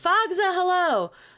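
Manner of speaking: very high-pitched, loud screaming. Greeting a viewer by name as the stream goes live: screaming a greeting. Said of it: "Sorry for screaming at you".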